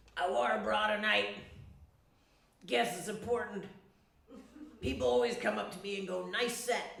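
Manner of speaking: loud, really gravelly, ground-out voice. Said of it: "She has this really gravelly voice".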